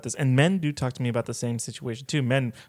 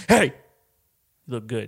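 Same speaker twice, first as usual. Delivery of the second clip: aggressive, in-your-face, picking-a-fight tough-guy tone. Picturing a stranger walking up to someone, imitating an aggressive dude. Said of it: "some dude just aggressively comes up to you like".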